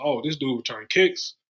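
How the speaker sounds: ordinary talk, nothing marked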